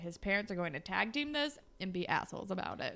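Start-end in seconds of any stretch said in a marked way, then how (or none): none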